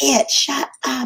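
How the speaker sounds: mock, full-on, high, shrill scream. Retelling how a man reacted to a little girl crying again, imitating someone screaming. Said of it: "And he's screaming like at this child".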